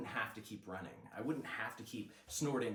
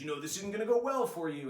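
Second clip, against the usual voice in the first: pressing, heated, raised and higher in pitch; 8 semitones higher, 8 dB louder than usual. Retelling a detective's warning after no cooperation: imitating a raised voice. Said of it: "he kinda raised his voice and said".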